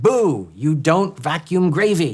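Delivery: acted screaming, high and drawn out, rebuking tone. Retelling a family argument after the father vacuumed spilled gravy: imitating mother screaming.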